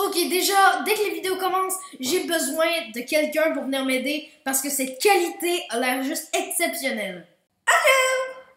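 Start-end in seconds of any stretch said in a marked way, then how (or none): 7.7-8.3 very high, loud, squeaky voice. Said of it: "C'est quoi cette voix aiguë?".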